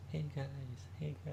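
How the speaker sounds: cave-like echo fading away. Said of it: "you literally hear, like, the echo".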